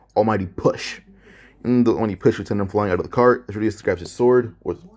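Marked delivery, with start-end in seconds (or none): none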